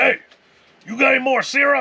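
mock, very high, loud holler. Retelling a story about syrup, quoting the dad: imitating a dad yelling. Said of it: "His dad yells".

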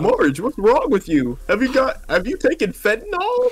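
poorly faked cartoon father voice. Improvising a comedy bit with another speaker, in a terrible Homer Simpson impression. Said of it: "That's a terrible Homer Simpson impression".

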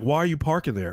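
mock harsh scolding, chewing-out tone. Retelling how the boss Ruby chews out about parking: imitating Ruby scolding. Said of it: "how does Ruby chew you out?".

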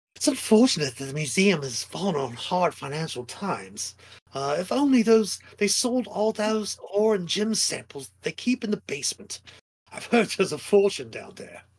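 high, snooty, haughty sneering voice. Describing a scene to listeners, the speaker voices a sneering, haughty heir. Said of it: "kind of a sneering, haughty heir".

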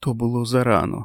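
hushed whisper. A woman replying to Larry, whispering. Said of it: "прошепотіла вона".

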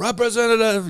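screaming "representative". Mimicking yelling at an automated phone line, screaming "representative". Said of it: "you're just screaming".

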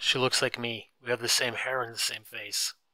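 plain

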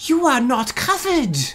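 mock furious, shrill, very loud, very high-pitched voice. Retelling what a woman said after putting in his card: imitating an angry statement. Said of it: "really angrily states".

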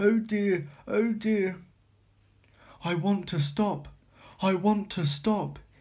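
weary, tired, puffed-out, puffing voice. A runaway engine with no driver wants to stop, puffing tiredly. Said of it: "he puffed in a tired sort of way".

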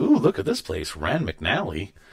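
ordinary delivery

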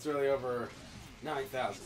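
uninterested tone. Playing a game while another player asks why they sound bored: bored. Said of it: "Why do you sound so bored?".

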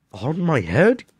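gasped, caught-breath delivery. Reading Bartholomew answering the king's question, gasping. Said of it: "Gasped Bartholomew".

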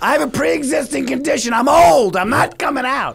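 put-on very high, panicked, terrified screaming. Describing the speaker's terrified mother, imitating her screaming. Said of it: "She's screaming".

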